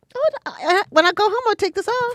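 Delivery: very high-pitched voice, very high register. Answering whether she ever goes without makeup, in a high-pitched voice. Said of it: "You don't have to go to your high voice".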